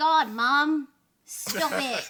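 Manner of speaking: very loud, high-pitched Australian twang. Comparing american and aussie versions of a character line, in an aussie accent. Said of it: "It's not the same if it's an Aussie one".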